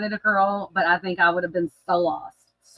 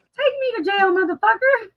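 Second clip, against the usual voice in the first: put-on very high, tiny, cute child's voice. Repeating what a kid said, imitating how he sounded, cute little kid voice. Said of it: "That's what he sounded like".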